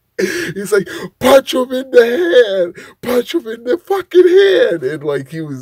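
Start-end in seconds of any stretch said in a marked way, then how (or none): 1.2-4.8 mad, shrill, very high-pitched screaming. Retell what a man was screaming during a fight, imitating mad, high-pitched screaming. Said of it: "they get that high pitched voice".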